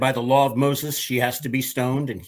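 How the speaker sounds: ordinary delivery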